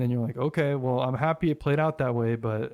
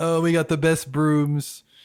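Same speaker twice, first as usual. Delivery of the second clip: big, loud, boastful politician voice; 4 semitones higher, 6 dB louder than usual. Joining a joke Donald Trump bit about broom service: Trump voice. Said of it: "doing the Trump voice".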